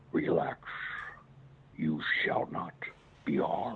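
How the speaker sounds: low, deep, terrifying voice. Speaker imitating a voice that spoke to them, in a deep, terrifying voice. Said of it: "if I can imitate it".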